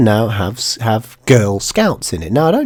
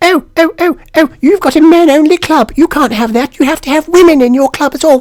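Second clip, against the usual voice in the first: very high, loud put-on falsetto woman's voice; 5 dB louder than usual. Doing a bit, the speaker imitates a woman objecting; high woman voice. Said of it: "I have to do it in a high voice because it's a woman".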